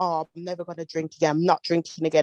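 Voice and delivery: ordinary talk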